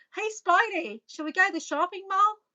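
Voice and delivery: bad fake Australian accent. Showing viewers how someone might ask to go to the mall, terrible Aussie accent. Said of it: "terrible Aussie accent".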